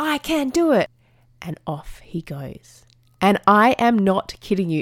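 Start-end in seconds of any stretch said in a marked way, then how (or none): 0.0-0.9 acted, very high-pitched child's yelled cry. Describing a boy riding up the hills, retelling a child's yell. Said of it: "And then he just yells out".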